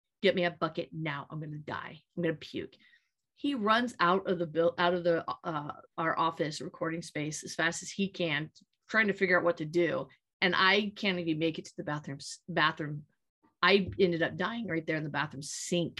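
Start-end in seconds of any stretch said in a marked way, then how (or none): 0.2-2.7 low, quiet, straight-faced deadpan. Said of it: "deadpan straight in the face".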